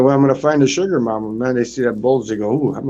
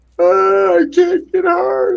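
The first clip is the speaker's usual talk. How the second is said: weepy, very high, very slow, drawn-out sobbing; 4 dB louder than usual. Retelling a phone call from someone who called him up: imitating someone crying. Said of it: "he's crying on the phone".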